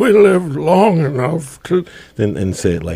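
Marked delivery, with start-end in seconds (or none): 0.0-1.9 mock elderly voice, aged up. Repeating a quote he plans to use, in a put-on old voice. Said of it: "I'm going to olden up my voice".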